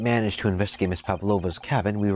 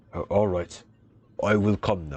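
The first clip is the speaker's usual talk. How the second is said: clumsy, fumbling, bad put-on Russian accent. Voicing a character who agrees to go to the captain: bad russian accent. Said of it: "messing up the Russian accent already".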